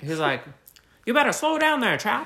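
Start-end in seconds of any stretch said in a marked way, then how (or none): 1.1-2.3 put-on old movie-style Mid-Atlantic accent. Quoting a man from a story to a co-host, in an old movie-theater accent. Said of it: "The Northeastern accent or whatever".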